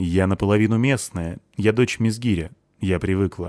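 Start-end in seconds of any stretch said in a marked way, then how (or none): none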